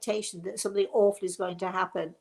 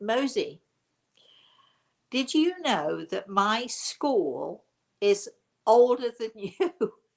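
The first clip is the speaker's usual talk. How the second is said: chuckling, laughing through the words; 4 dB louder than usual. Speaker repeats a question he was asked, laughing while speaking. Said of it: "Sorry, I'm laughing when I say this".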